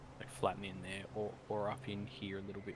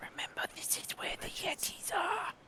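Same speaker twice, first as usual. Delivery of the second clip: drawn-out, breathy, slow, carrying stage whisper; 5 dB louder than usual. Warning the party quietly about where the Yetis are: whispering. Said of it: "true to what he's whispering".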